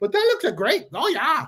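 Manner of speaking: put-on Minnesotan-sounding accent. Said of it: "Did you turn like Canadian?".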